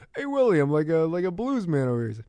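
rough, high put-on star voice. Retelling a movie scene, voicing a character: pseudo Stallone voice. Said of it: "I'm gonna keep doing it".

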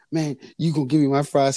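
high, mock screaming rant. Retelling a scene where a boy argues with a waiter: imitating someone screaming.

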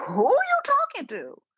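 loud, very high, swooping, drawn-out scream. Retelling reacting to a show on tv: imitating screaming at the tv. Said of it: "screaming at the T V".

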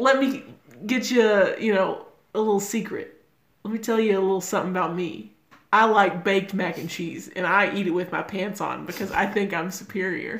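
ordinary delivery

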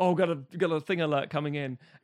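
ordinary delivery

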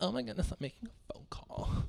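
put-on whispered, hushed, breathy young woman's voice. Mimicking the people who take pictures at the phone booth, impression of people taking pictures. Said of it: "That's my impression of people taking pictures".

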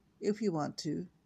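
ordinary delivery

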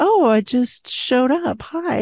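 slow, play-acted sly, innocent tone. Retelling how the fairy godmother greets her goddaughter: imitating a sly fairy godmother. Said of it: "she's very sly".

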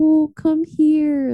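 affectionate, loving, high-pitched doting voice. Imitating the other speaker calling their dogs over: imitating a loving voice to dogs. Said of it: "in a very loving way".

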